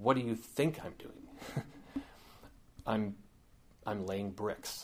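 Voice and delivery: acted-out, hushed, disgusted near-whisper. Telling a story, voicing the first guy answering the question, retelling a disgusted reply. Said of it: "with disgust in his voice".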